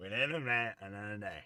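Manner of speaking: mock Louisiana accent, slowed. Quoting wise words while painting; Waterboy coach impression. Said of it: "That was my impression of him".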